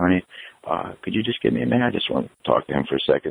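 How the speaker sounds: close, quiet, private whisper. Retelling asking his wife for a minute alone: imitating a whisper. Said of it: "I whispered to her".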